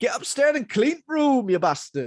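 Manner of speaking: put-on northern English dad voice. Comparing someone's dad to a seventies British drama father: northern English dad accent. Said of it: "like a northern dad from like a British".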